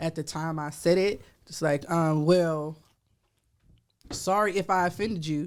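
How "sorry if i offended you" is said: put-on patronizing, condescending tone, talking down. Retelling an apology said in a past argument: imitating own condescending tone. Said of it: "So condescending".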